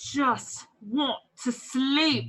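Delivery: slow, drawn-out stage whisper. Speaking in character while the party flees a necromancer: stage whisper. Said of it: "I say that under my breath. I'm stage whispering".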